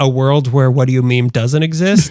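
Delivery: normal talking voice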